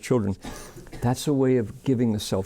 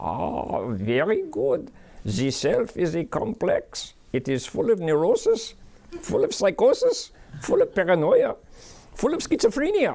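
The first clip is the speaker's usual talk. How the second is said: laid-on bad German accent, high and swooping; 8 semitones higher than usual. Asking Doctor Freud what the self is, answering as him: bad Sigmund Freud German accent. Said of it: "Just a bad German accent".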